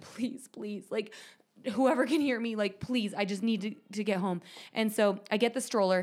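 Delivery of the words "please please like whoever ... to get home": put-on desperate pleading tone. Retelling begging out loud to get home in time: imitating own desperate pleading. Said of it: "out loud being like".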